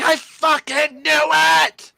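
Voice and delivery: shrill, very drawn-out, raw, loud, high excited shriek. Retelling a reaction while reading a book, retelling an excited scream. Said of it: "I screamed out loud and was like".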